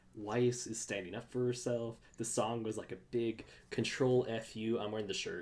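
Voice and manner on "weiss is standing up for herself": ordinary delivery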